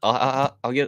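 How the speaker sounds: stuttering. Speaker unsure if doing it right, trying to go on: stuttering. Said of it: "Sorry for the stuttering".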